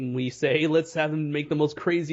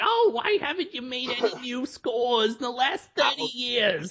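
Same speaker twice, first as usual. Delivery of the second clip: pitched-up nagging spouse voice; 9 semitones higher than usual. Acting out a stereotypical arguing couple: put-on nagging spouse voice. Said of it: "stereotypical arguing, nagging house couple".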